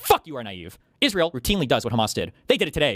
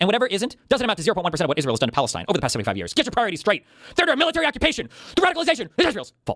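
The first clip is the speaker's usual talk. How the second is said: mock angry cartoon-character voice, rising in pitch; 4 semitones higher than usual. Parodying an opponent's argument, in a cartoonish, mock-angry voice. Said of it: "in a cartoonish, angry voice".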